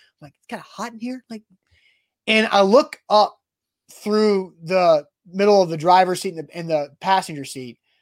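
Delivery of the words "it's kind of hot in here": hushed, very soft, very quiet voice. Retelling what you said to your wife in the car, talking quietly. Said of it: "I'm talking quiet because I don't want to like be awkward".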